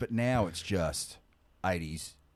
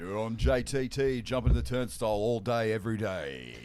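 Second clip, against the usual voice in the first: mock radio announcer voice, higher; 4 semitones higher, 3 dB louder than usual. Joining a joke opening styled like a radio show: put-on radio DJ voice. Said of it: "do we run it like a radio show?".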